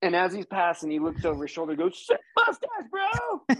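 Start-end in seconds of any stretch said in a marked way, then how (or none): 2.0-3.6 shrill, very high hollered yell. Recounting what a passing mountain biker said over his shoulder, mock-yelling. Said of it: "Like yells it".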